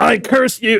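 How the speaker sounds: very high, shrill shouting. Playing the character Tal is hitting with the force, shouting a curse. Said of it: "He's shouting".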